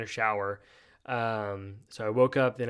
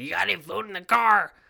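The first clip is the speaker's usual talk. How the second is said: put-on real raspy old woman's voice, loud and high; 8 semitones higher, 6 dB louder than usual. Retelling what the old lady at the Airbnb asked at the door, raspy old lady voice. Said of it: "she's got this real raspy voice like this".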